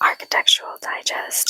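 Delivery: hushed, toneless whisper. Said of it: "I don't know why I whispered that".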